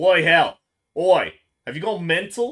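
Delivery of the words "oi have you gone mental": put-on Australian accent. Voicing a game character's line, warmed up with shrimp on the barbie: put-on Australian accent. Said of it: "Every time I do his voice, I have to say "shrimp on the barbie"".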